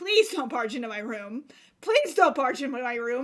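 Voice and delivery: frantic, panicked, begging pleading tone. Retelling hoping parents won't come in while crying: retelling own panicked plea. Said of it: "I was panicked".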